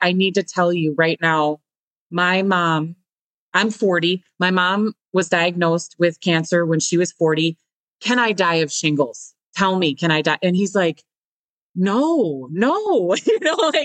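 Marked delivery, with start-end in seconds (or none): none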